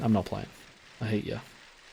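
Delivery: mock hushed, low, flat, zero-emotion deadpan. Reading out a chat message in reply to a viewer: pure deadpan. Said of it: "it was just pure deadpan".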